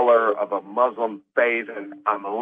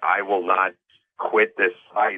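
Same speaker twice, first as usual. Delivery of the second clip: mock-somber, put-on solemn, grave delivery; 3 semitones lower than usual. Mocking someone speaking to the camera, imitating a somber tone. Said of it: "somberly saying".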